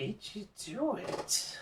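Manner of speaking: very high cackling voice through a laugh. An unseen voice speaks to players searching for the star; cackling voice. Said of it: "it sort of cackles uh".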